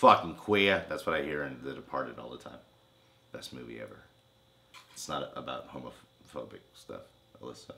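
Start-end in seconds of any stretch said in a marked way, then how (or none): 0.0-0.8 booming, very loud put-on New Jersey accent. Showing another accent after the Boston one: put-on New Jersey accent. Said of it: "Also my New Jersey accent".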